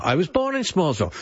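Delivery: ordinary delivery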